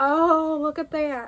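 loud, slow southern drawl. Showing a shirt to the audience, slipping into a southern accent. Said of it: "I just said that in a southern voice".

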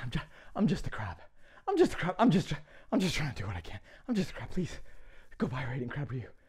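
desperate, begging plea. Ending an ad in character as a crab: pleading desperately. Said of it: "I'm begging".

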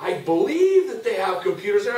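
uncertain, doubting, unsure inflection. Language lesson showing how English inflects doubt: doubtful, unsure tone. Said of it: "we'll inflect doubt into this sentence by our inflection".

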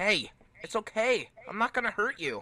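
gentle, slowed, soothing voice. Redoing a line after being teased for rushing reassurance, slower calm reassurance. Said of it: "I'll redo it".

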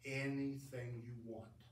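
utterly unruffled, very calm, soft delivery. Retelling a story, quoting the man in the chair answering: retelling a very calm reply. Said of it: "looks at him in a very calm voice".

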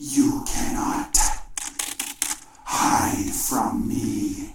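creature-like monster voice. Narrator voices the creature the listener hears searching for them: creature's voice. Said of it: "you hear in its voice".

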